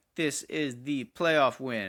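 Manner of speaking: mechanical, robot-like machine voice. Mocking own earlier delivery of the final score: robot-like voice. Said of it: "like a robot or something".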